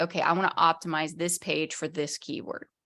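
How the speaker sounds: ordinary talk, nothing marked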